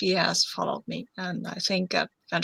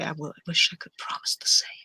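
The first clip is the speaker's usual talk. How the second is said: intimate voice, as if close to the ear. Speaking in character into another character's ear after a kiss: very quiet voice. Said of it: "I say very quietly and just, just to your ear".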